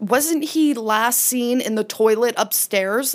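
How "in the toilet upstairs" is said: ordinary talk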